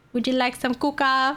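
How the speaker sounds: put-on word pronounced as kuka in a Vietnamese accent. Retelling being offered a drink: imitating Vietnamese pronunciation of Coke. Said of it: "It's like "Kuka."".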